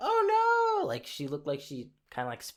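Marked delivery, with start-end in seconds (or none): 0.0-0.9 very high, drawn-out, alarmed, startled cry with long "oh". Retelling how a restaurant lady reacted to shoes on tatami: imitating someone freaking out. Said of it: "spazzed out".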